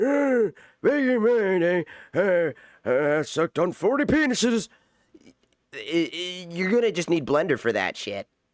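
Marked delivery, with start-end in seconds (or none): 0.0-4.7 put-on very slow, drawn-out, high elderly man voice. Showing how he talks when making old men: old man voice. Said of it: "Like to get like an old man, like I'm talking like".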